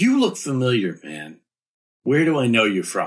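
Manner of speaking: put-on loud, tipsy, slurred, chummy drunken voice. A character wanders up drunkenly, arm over Dilly's shoulder, greeting him: somewhat drunk. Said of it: "Somewhat drunkenly".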